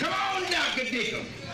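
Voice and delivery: excited, loud shouting.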